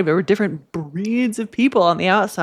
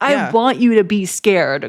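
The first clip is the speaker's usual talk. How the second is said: mock urgent yell, slow, mild and drawn out. Retelling a scene where the mom yells at a little girl: imitating someone yelling. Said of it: "And the mom yells".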